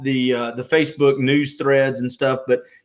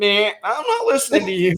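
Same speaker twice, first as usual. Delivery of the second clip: put-on higher-pitched grouchy old man voice. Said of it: "you do sound like a grouchy old man".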